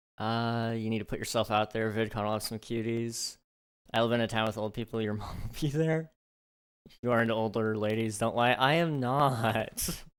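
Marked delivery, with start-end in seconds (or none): 8.5-9.9 whining voice with drawn-out "not". Denying a co-host's teasing, the speaker answers whiny. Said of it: "I sounded so whiny when I said I'm not".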